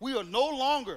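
full-on loud, high-pitched preacher shouting. Speaking to the audience about the family of god, yelling. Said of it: "Sorry for yelling".

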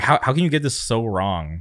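normal talking voice

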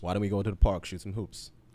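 fake everyday American accent.

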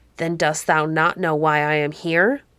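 ordinary delivery

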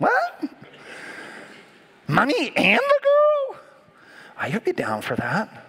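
put-on very high, swooping fifteen-year-old boy voice. Reacting to a bible passage, the speaker uses a 15-year-old boy voice. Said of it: "That's my 15-year-old boy voice".

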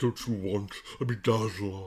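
creepy, sinister devil voice. Acting out the film's devil tempting the heroine: Tim Curry devil impression. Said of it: "my Tim Curry devil impression".

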